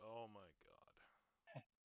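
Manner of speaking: exasperated, fed-up voice with swooping pitch. Rubbing the bridge of the nose in character: exasperated. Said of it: "I'm just rubbing the bridge of my nose like".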